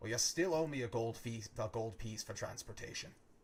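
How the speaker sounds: annoyed, irritated, put-upon grumbling. Voicing a barkeep who demands payment for transportation: irritated. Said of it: "He looks toward you with irritation and says".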